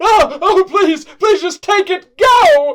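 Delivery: terrified yelling. A game master voices the terrified yelling the players hear: terrified yelling. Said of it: "like terrified yelling".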